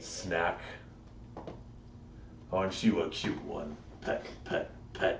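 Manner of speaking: deep, breathy, whispered giant voice. In a role-play, a large figure stops behind the three-foot-tall character, deep voice. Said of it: "in a deep voice that shakes your tiny frame".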